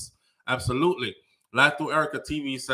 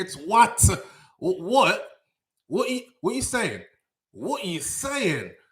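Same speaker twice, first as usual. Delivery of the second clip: put-on Southwest London roadman accent, higher; 6 semitones higher than usual. Recalling coming back and being told to stop, the speaker acts out his Southwest London roadman accent. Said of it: "sounding more like a roadman from Southwest London".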